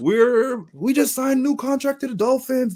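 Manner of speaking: hyped, excited screaming. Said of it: "They were screaming out the window".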